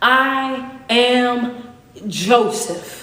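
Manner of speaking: very slow, drawn-out proclaiming voice.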